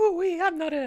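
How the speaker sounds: bad, squeaky, high-pitched, loud cartoon voice. Retelling a cartoon scene, acting out a character line: Mr. Poopybutthole voice. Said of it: "I can't do his voice".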